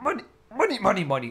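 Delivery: high cartoon crab voice. Asked how the cartoon character says it, attempting a Mr. Krabs voice. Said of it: "How do you do it in Mr. Krabs' voice?".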